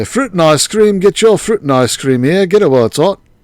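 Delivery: bad fake English accent, loud, high, street-hawker style. Calling out to festival passers-by as a seller, in an affected way, in a bad English accent. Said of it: "I've never worked on an English accent".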